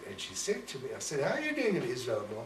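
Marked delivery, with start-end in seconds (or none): none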